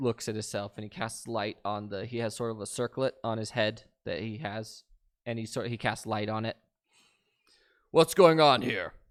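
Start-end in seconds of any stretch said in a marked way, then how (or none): 7.9-8.9 very loud, echoing, booming voice. A character arriving on the scene calls out in a loud booming voice. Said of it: "the loud booming voice echoes".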